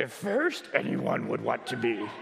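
very low, creaky, swooping voice. Explaining the emphasis of a text's word order, honoring the great Yoda in a Yoda voice. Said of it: "to honor the great Yoda, I will speak like him".

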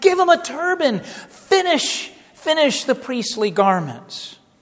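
high, loud, swooping, thrilled and eager exclamation. Retelling the prophet's words from the verse, imitating excited Zechariah. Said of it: "he's so excited, he's like".

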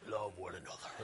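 mock manly voice, very low and soft.

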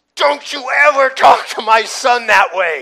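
very loud, high, protective scream. Retelling how his mother jumped in front of him and screamed at a man, imitating someone screaming. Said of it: "she starts screaming at him".

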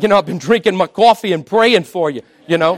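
put-on New Jersey accent. Retelling what a man from New Jersey says, imitating Jared's New Jersey accent. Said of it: "I don't know if that was a good accent or not".

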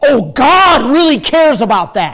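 openly sarcastic, mocking tone. Preacher answering an imagined excuse about skipping church, mocking. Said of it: "I am mocking".

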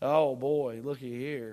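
slow, dry, mocking sarcastic drawl. Showing the congregation a sarcastic way to talk: imitating a sarcastic tone. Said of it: "a really a sarcastic way to communicate".

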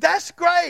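high, wide, amazed delight.

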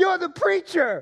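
very high, loud, called-out shout. Speaker recounts a man in an approaching crowd yelling at him; imitating someone yelling. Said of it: "And then he yells out".

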